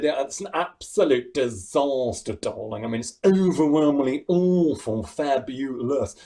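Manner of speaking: slow drawl, every word drawn out. Retelling a cruise ship stage show, doing a Craig Revel Horwood impression. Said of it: "I did an impression of him".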